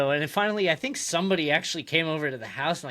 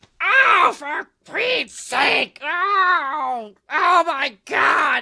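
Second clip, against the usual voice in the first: shrill, booming, high, shrieked, drawn-out "oh" exclamations; 12 semitones higher, 8 dB louder than usual. Doing a self-described terrible impression of Gilbert Gottfried: Gilbert Gottfried impression. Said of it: "That was my Gilbert Gottfried impression".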